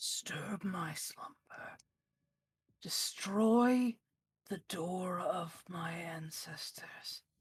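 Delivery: harsh, eerie, ghastly whispered voice. Voicing a destroyed creature cursing the player: harsh ghastly whisper. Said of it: "in this harsh, ghastly, just whisper of a voice".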